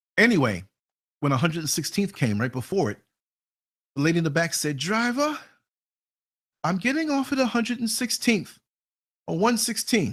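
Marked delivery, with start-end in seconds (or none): 4.8-10.2 put-on slight, slow Jamaican accent. A driver quotes a woman passenger asking to get off: light Jamaican accent. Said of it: "Little Jamaican accent, West Indian accent".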